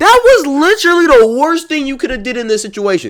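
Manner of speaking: high, loud incredulous outburst.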